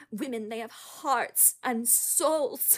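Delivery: British speaker's put-on American accent. Quoting a line from Little Women, doing a Kate Winslet impression. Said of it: "British people doing American accents".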